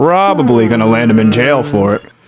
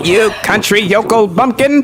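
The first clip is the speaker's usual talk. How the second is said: weird little nerdy character voice, higher pitch; 10 semitones higher than usual. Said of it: "this weird little nerd voice for him".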